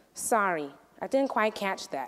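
strange, soft, flat sinister monotone. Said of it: "sinister, strange, monotone voice".

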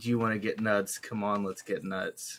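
plain

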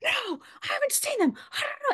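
tired, high, snapping yell. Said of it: "yelled at me like a person who's had a really hard day".

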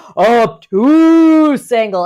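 big, booming voice. Introducing the obtuse angle in an angles lesson, in a big voice. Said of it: "I always like to say it in a big voice".

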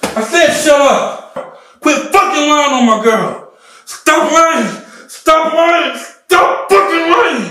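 very high, very loud, shrill, drawn-out, out-of-control screaming. Skit, a man confronting his friend since grade school, agitated. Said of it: "you need to calm down".

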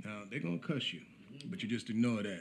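ordinary delivery

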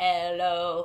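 robotic voice. Saying hello at the start, showing off a robot voice. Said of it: "this is my robot voice".

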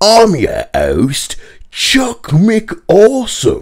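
exaggerated Cockney voice, very high and swooping. Speaker reading a show script's host introduction, exaggerated Cockney accent. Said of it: "in a Cockney accent, exaggerated".

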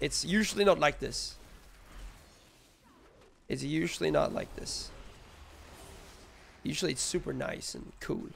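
raspy, hoarse voice.

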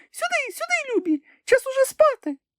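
tiny, piping, very high thin voice. Narrator reading a story voices the canary calling to her children: thin little voice. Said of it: "тоненьким голоском загукала".

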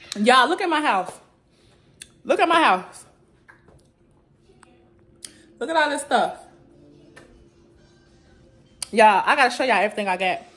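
breathless, winded. Showing viewers a house full of stuff just carried up alone, out of breath. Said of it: "I'm out of breath".

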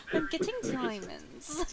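sing-song put-on British accent. Teasing a teammate by repeating the line: imitating a British-sounding line. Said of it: "such a, like, British".

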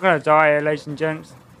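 ordinary talk, nothing marked

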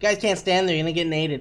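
mock, teasing, high, derisive tone. Repeating a teammate's callout to mock it: mocking a teammate's callout. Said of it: "Why does he have to keep laughing".

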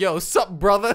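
put-on American urban slang dialect over a Nordic accent. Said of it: "this Nordic guy be like".

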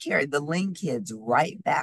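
ordinary delivery

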